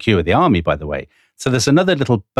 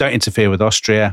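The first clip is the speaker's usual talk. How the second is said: usual speaking voice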